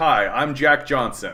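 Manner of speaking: put-on slow child reporter voice. Imagining a clip switching to a kid's school news report: imitating a twelve-year-old's school report. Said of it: "put in that it's gonna be like".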